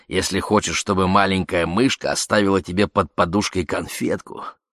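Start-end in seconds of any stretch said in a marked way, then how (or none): none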